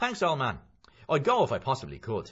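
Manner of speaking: cheery, booming, bright, loud, swooping voice. Narrator voicing a man thanking another for agreeing to a favour, brightly. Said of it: "McCoy said brightly".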